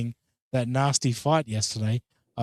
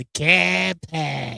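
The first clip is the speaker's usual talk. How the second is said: Boston accent laid on thick; 3 semitones higher than usual. Praising how a phrase sounds from Boston speakers, Boston accent. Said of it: "That's what I love about the Boston accent".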